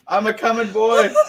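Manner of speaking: put-on very loud, high, belted-out Scottish accent. Players asked to do their best Scottish accents; Groundskeeper Willie Scottish accent. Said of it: "We're all groundskeeper Willie".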